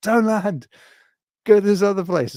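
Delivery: shrill, very high-pitched, loud shout. Retelling a badly written film scene, imitating film characters shouting. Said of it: "They just shout at the people in the helicopter".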